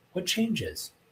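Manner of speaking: what changes pitched high with questioning inflection. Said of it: "I like doing that with my voice inflection to show that".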